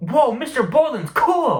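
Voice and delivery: high, play-acted, utterly astonished exclamation. Retelling a friend's reaction to the teacher's story: imitating Ben's surprised tone. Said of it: "surprised tone I've ever heard him".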